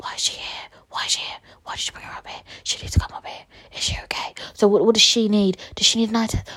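hushed, whispered, gossipy quiet murmur. Retelling staff at the optician's talking about her: imitating someone speaking quietly. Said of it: "not whispering, but just speaking quietly".

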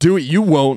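high-pitched, loud shouted yell. Retelling a coworker yelling back up the slide: retelling a yell back. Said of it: "Ritsky yells back up".

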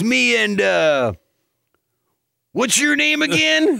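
mock very loud talking. Imitating a man who walks in before a ceremony, in a really loud voice. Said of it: "but a really loud voice".

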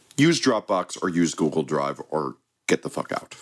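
ordinary talk, nothing marked

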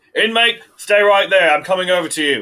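very high, very loud, forceful shout. Voicing a guard who calls out about an open cell door: prison guard voice. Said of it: "the guard".

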